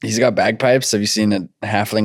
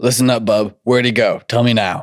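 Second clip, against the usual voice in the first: mean, pushy, demanding tone. A character presses a nervous man for where someone went, mean demanding tone. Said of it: "stop being mean".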